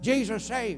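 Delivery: put-on elderly North Carolina country voice. Retelling a man handing a lady a tract, imitating an old north carolina man. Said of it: "this old guy from North Carolina was up there, and he was passing out tracts talking like this".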